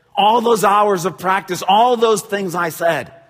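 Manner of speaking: furious, very high, very loud, shrill rant. Retelling a dad whose daughter struck out: imitating a livid dad. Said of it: "is livid".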